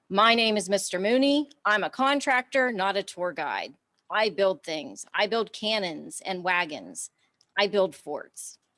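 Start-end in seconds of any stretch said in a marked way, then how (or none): none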